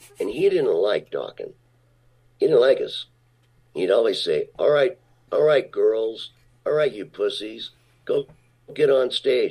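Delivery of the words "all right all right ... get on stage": put-on New York tough-guy voice, Brooklyn, pitched up. Quoting a bodyguard who mocked the band: imitating new york tough guy. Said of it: "with the New York act".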